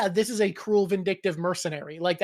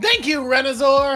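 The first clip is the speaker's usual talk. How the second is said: very loud, booming, high, showy announcer voice; 7 semitones higher, 8 dB louder than usual. Thanking a new crew member by name, in an announcer voice. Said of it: "You have a great announcer voice when you do it".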